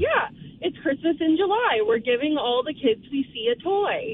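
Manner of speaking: normal talking voice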